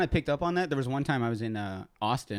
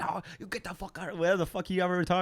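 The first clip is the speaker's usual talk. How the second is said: bad fake Indian accent, pitched up; 7 semitones higher than usual. Retelling how a man told him to get out, in a bad Indian accent. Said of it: "That's not like an Afghanistan accent".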